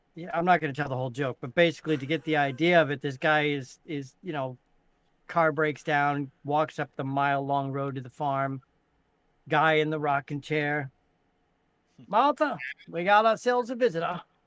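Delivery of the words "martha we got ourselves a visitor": put-on Maine accent, higher. Telling a Maine joke, voicing the farmer: fast Maine accent with a slur. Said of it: "it's a fast-spoken, but with a slur".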